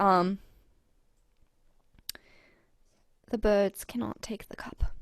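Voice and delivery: soft, quiet whisper. A character passes on a message, trying not to be overheard: soft whisper. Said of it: "she's gonna whisper again softly".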